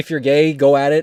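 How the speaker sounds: plain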